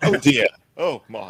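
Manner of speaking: very loud, slow, prim and proper English voice. Showing how the English man sounds: imitating a prim and proper English man. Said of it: "prim and proper even at that point".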